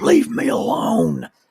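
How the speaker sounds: acted-out high, rough, ragged scream. Retelling how a sick hotel guest answered through the door: imitating a scream. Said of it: "he screams through the door".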